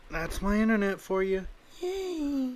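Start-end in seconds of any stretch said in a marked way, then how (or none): 1.8-2.5 put-on very high, squeaky girly voice. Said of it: "I can't do my girly voice anymore".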